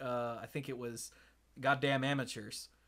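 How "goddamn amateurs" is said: acted mumbling, quieter. Recounting leaving after a long wait without saying anything else, retelling a mumble. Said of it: "mumbling something about".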